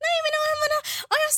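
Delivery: put-on high, girly apologetic voice.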